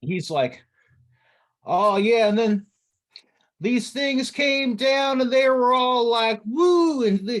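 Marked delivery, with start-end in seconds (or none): 1.6-7.4 high, loud, chattering yokel voice. Voicing Tomas talking excitedly outside with somebody: Tomas putting on hayseed demeanor. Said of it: "put on some sort of, like, um, hayseed kind of demeanor".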